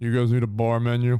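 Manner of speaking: low, flat, dull, lifeless monotone drone. Imitating someone offering a bar menu, in a flat monotone voice. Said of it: "in the most monotone, shitty voice".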